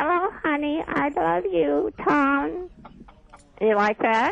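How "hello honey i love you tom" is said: put-on dummy voice, higher pitch. Asked to talk in her dummy's voice, the ventriloquist greets Tom in Susie voice. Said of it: "You want me to talk to you with her voice?".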